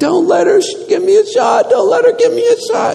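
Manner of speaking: put-on shrill, high, ragged, rough screaming child's wail. Speaker tells of a sick boy as a nurse brings a shot, imitating a screaming child. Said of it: "the child just starts screaming".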